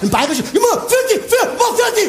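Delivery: put-on dog barking, Bavarian accent.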